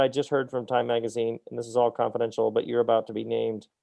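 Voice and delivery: ordinary delivery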